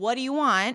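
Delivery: put-on angry man voice. Retelling a drama scene where a big guy opens the door: imitating an angry man. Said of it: "and he is pissed".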